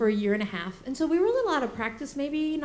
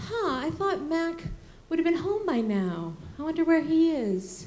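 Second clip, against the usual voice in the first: sugary-sweet, very sweet, high motherly voice; 5 semitones higher than usual. Retelling what the speaker's mom would say to them, imitating mom's very sweet voice. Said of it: "in a very sweet voice".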